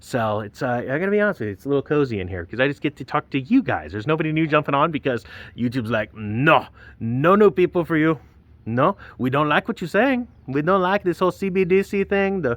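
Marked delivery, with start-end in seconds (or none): 6.1-12.4 pitched-up, odd put-on French Canadian accent. Host voicing YouTube turning his channel away, odd put-on accent. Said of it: "Is that a French Canadian accent?".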